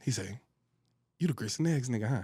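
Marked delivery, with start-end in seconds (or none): 1.2-2.2 low, quiet, serious, confident tough-guy voice. Speaker retelling a guy walking up to confront them, imitating the guy's voice. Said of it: "In that voice".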